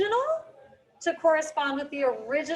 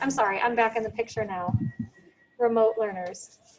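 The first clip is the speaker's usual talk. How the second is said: ordinary talk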